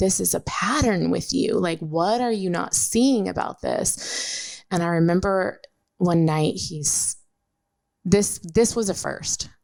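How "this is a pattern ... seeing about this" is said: put-on toned-down, mild, heated scream. Retelling a fight about a trip: imitating own screaming. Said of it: "And I'm just screaming".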